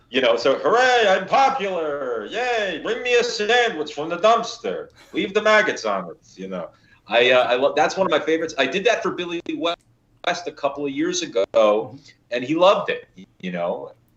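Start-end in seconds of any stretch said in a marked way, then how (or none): 0.6-6.2 high, sing-song, swooping cartoon crab voice. Doing a requested voice from Futurama: Doctor Zoidberg voice. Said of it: "my favorite one to do is Professor Zoidberg".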